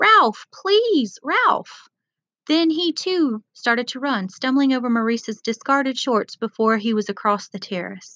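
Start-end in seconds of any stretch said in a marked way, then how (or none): 0.0-1.9 shrill, very high shout. Narrating Piggy calling after Ralph as he runs off, shouting. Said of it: "Piggy shouted".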